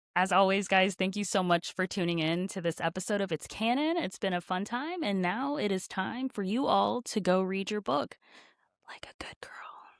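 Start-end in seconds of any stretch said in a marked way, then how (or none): 8.9-9.6 gentle, very quiet, breathy whisper. Closing the episode outro for listeners when asked: whispering. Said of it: "It's a whisper this time".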